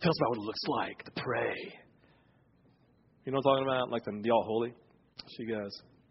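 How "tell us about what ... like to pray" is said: put-on, mock solemn reverent voice. Retelling asking her, in a room, what her prayer time looks like, put-on religious voice. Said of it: "you ask it in your religious voice".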